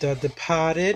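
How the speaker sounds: Boston accent pronunciation. Reading off movie titles while shelving them, in a Boston accent. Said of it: "You gotta say it like that because the Boston accents".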